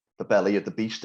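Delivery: ordinary delivery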